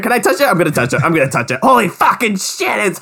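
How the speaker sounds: mock, very high, swooping, giddy, over-the-top gush. Retelling a dub scene running out of the forest: imitating Hanji's over-the-top excitement. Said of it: "She is over the top in the dub on this".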